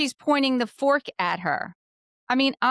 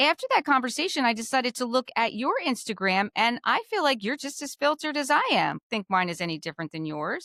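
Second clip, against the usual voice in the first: plain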